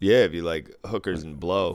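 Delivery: ordinary delivery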